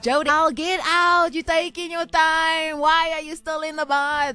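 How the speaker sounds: high, loud shouting. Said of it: "my mom was shouting from the outside".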